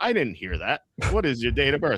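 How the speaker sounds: high, swooping automated phone-system voice. Retelling a call where the phone system keeps asking again, doing the AI phone voice. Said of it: "the A I voice on the phone".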